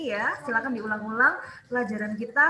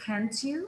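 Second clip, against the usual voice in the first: can't you lifting gently upward; 5 dB quieter than usual. Teaching an english question tag, slight rise on can't you. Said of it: "Can't-nya agak naik".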